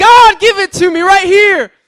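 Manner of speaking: frantic, desperate, shrill, very high, full-volume yell. Retelling how a man on a chair shouted his plea: retelling his shouting. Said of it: "And he's just shouting".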